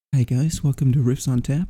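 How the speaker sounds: smooth, calm public radio presenter delivery. Podcast host joking they should open Riffs on Tap with an NPR intro: NPR host voice. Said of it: "We should just start doing an NPR intro".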